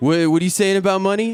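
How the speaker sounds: put-on slurred drunk voice. Retelling a stranger's question, imitating a drunk man with food in mouth. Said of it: "he's all fucked up and he's got, like, food on his mouth".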